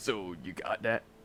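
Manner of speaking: sudden western cowboy voice with slow drawl. Repeating the other speaker's question back: imitating a cowboy voice. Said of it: "He sounds like a cowboy now".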